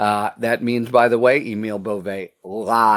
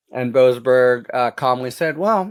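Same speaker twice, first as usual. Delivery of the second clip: plain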